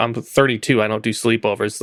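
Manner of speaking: ordinary talk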